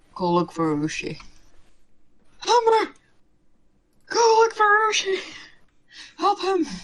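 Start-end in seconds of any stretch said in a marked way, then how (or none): 2.5-6.7 loud, very high-pitched yell. Yelling at a companion to go look for an ally: yelling for Umber. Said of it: "I'm gonna yell for Umber".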